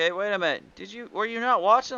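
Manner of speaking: normal talking voice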